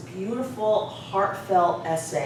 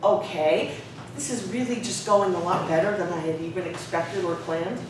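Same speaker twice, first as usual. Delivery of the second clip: ordinary talk, nothing marked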